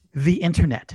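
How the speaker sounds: mock straight-faced, flat, matter-of-fact delivery. Retelling a customer's answer to a question, imitating a customer's deadpan answer. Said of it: "without missing a beat and with a straight face".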